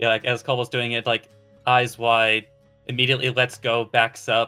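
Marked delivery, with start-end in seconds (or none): none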